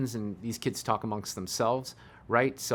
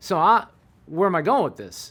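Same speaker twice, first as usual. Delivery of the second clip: normal talking voice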